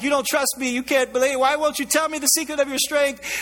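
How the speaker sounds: put-on crying voice. Retelling a Bible story, the speaker voices a woman pleading with Samson: imitating a crying plea. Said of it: "she comes back to him crying like".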